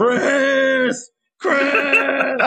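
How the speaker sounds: high-pitched mock yell. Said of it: "Wesker yells".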